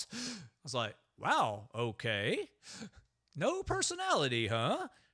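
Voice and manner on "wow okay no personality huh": put-on surprised voice. Recalling own reaction to how things started out, retelling own surprise. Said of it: "I was sort of surprised".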